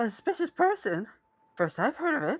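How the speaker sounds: very high voice, muffled through a mask. A character asked about a suspicious person on school grounds answers, talking through a mask. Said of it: "very realistic depiction of someone talking through a mask".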